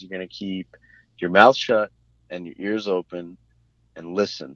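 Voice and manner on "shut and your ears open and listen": normal talking voice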